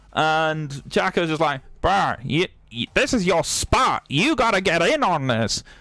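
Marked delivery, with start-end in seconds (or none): 1.8-5.6 clumsy, bad put-on American accent. Retelling what a streamer said about joining Nurko: imitating Chaco. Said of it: "That's the best Chaco voice I got".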